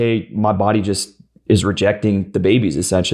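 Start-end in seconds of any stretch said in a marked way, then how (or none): none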